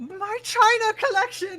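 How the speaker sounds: very high, shrill shriek. Voicing an unseen neighbour as the wall explodes: screaming. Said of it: "you do hear someone scream".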